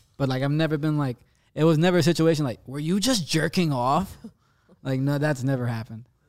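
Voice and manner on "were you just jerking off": stern, accusing, reproachful tone. Saying he was never caught, acting out the question in a mom tone. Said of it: "That sounded like a mom tone".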